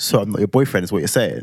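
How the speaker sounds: ordinary talk, nothing marked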